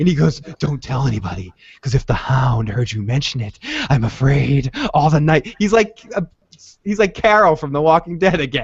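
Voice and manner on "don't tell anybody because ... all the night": super creepy put-on voice. Retelling what a man said on the phone, mock super-creepy voice. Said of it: "in that super creepy way".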